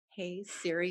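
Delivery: quiet, murmured voice. Explaining how to find the podcast by phone: saying it really quietly. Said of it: "I have to say it really quiet".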